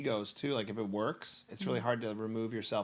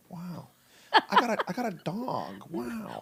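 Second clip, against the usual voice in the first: put-on laid-back actor voice, higher and louder; 9 semitones higher, 5 dB louder than usual. Trying an Owen Wilson impression while talking about his catchphrase: Owen Wilson impression. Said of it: "I can't do him".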